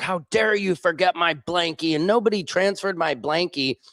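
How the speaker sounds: put-on high, spoiled, indignant, entitled yelling. Retelling how she yelled at the pilot on a government plane, retelling an entitled yell. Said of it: "yelling at the pilot".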